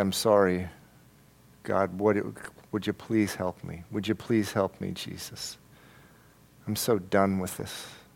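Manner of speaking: put-on beseeching tone. Acting out a sinner coming back to Jesus: acting out crying out to God. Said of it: "And you're crying out to God".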